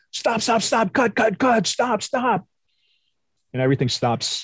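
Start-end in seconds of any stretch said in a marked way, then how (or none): 0.1-2.4 shrieking, high-pitched screaming. Retelling a director calling off a countdown on set, retelling a director screaming. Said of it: "he's screaming".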